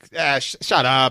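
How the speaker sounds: put-on slow North Jersey Italian accent, laid on thick. Speaker doing their dad's voice from inside their head, in a North Jersey Italian accent. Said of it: "very North Jersey Italian".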